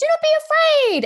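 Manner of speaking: put-on shrill, piercing, very high old woman voice. Retelling a voice heard while walking back toward the tavern, in a high-pitched old lady voice. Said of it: "this weird high-pitched voice go".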